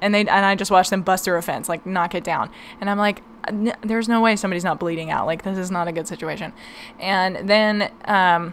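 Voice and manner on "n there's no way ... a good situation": ordinary talk, nothing marked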